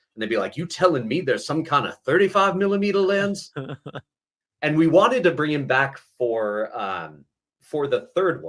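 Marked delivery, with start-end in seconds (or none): 0.6-3.5 put-on slight Southern accent, pitched up. Retelling how they would answer a lens change: slight Southern accent. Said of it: "a little bit of a Southern accent".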